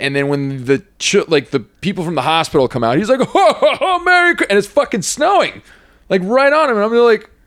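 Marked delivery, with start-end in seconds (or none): 3.2-4.5 cheerful high-pitched ho ho ho. Retelling how a man greeted people coming out of the hospital, in his Santa voice. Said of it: "he starts practicing his Santa voice".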